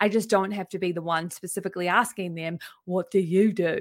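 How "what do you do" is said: odd, funny, weird put-on voice, slow. Talking about networking, acting out asking someone what they do, weird voice. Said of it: "I said that in that weird voice".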